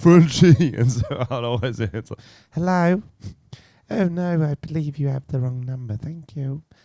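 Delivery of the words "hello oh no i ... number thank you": polite fake little old lady voice, pitched up. Retelling answering prank callers on the phone, in a fake old lady voice. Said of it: "I can't call out this old lady".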